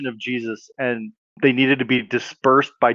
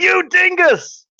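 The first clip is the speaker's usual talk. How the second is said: play-acted, shrill, very loud, high-pitched hollering shout; 4 dB louder than usual. Acting out a made-up theory about a girl soaked with water: yelling super loud. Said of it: "she yells".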